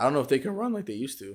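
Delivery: breaking voice, cracking mid-line. Talking with friends in a group conversation, voice cracking. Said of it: "My voice just cracked".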